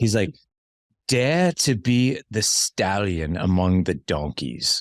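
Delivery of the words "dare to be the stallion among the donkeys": slow, put-on New Zealand accent, best attempt. Speaker quotes a man's favourite saying, doing a New Zealand accent. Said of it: "I'll do my best New Zealand voice".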